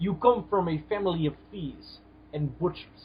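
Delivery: put-on soft, quiet, poor Russian accent. Trading Iron Man movie references, delivering a line in a bad Ivan Vanko impression. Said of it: "[name]'s Russian accent is so bad".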